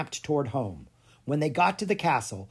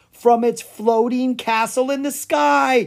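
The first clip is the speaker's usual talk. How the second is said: triumphant, victorious, very high and loud; 10 semitones higher, 7 dB louder than usual. [name], reading a book with Clara, speaks up, triumphant. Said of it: "said [name] triumphantly".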